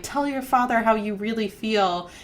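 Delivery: ordinary delivery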